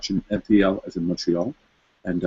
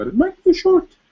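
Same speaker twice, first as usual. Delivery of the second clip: voice going very high and loud. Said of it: "my voice went up so high".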